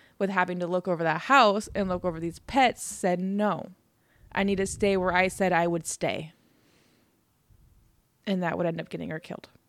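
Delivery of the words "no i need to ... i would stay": plain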